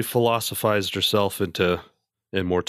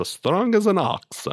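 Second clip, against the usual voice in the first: very high put-on Polish accent, old woman voice; 12 semitones higher than usual. Showing how a grandmother would say the saying: Polish accent. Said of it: "she would talk probably like this".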